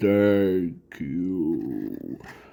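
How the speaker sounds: very deep voice, drawn-out "you". Retelling a story, the speaker voices a voice inside a character, very deep. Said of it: "let me do it in a deep, deep voice".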